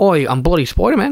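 fake, put-on Australian accent. Doing a joke line as spider-man: put-on australian accent. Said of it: "Australian accent's, like, the only one I can do reliably".

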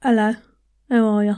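Londoner's accent. Explaining British accents, the speaker demonstrates a London accent.

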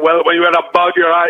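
put-on voice with a rasp. Retelling a first try at an impression, talking like this: George Lopez impression. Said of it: "I started talking like this".

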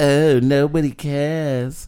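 high-pitched, mocking, complaining voice. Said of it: "when she's being all like".

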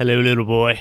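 terrible deep southern accent, creepy clown voice. Showing off one of their clown voices: deep southern scary clown voice. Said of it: "All my clown accents are a deep, southern, scary, terrible accent".

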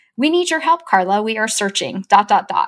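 usual speaking voice

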